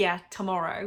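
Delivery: quick, sarcastic, throwaway delivery. Retelling own first reply to a viewer's question: retelling own sarcastic reply. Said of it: "as a sarcastic answer".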